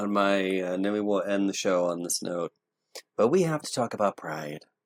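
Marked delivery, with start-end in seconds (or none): 3.2-4.6 playfully sinister evil-villain delivery. Announcing the last topic before ending the show: mock villainous tone. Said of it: "you just said that in such a villainous tone".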